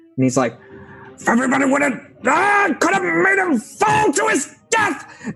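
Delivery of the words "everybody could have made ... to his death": mock-angry outburst, much higher pitch. A speaker acts out what a character said during a fight, acting out an angry outburst. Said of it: "He just gets really angry".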